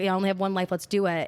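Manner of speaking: ordinary talk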